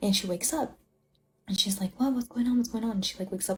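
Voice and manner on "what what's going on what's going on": all frantic and confused delivery. Retelling the mom waking up in bed: imitating a frantic mom. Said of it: "wakes up, like, all frantic".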